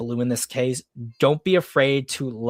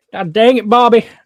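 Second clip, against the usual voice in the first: loud, pitched-up, rough attempt at Texas accent; 10 semitones higher, 11 dB louder than usual. Asked for Hank Hill's voice and accent, the speaker tries it: Hank Hill voice attempt. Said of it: "I can't even do".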